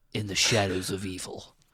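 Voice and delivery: put-on spooky ghost-story storyteller voice. Reading the opening of a ghostly tale aloud, speaker uses a scary voice. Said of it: "in my scary voice".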